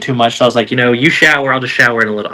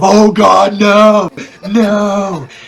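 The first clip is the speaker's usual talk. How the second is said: mock very slow guttural scream, not stretched; 9 semitones higher, 3 dB louder than usual. Retelling a bathroom accident, imitating a guttural scream. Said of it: "this guttural scream of".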